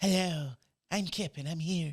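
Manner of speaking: slow, drawn-out put-on cartoon character voice. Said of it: "made him sound like Kip from Futurama".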